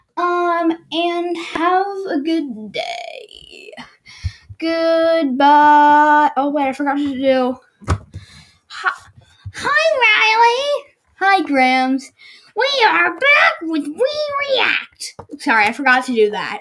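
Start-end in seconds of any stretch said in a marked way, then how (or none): 8.7-15.2 put-on grandma voice, pitched up. Doing the show's intro in place of Grams: imitating Grams. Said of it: "Grams, sorry, I wasn't making fun of you".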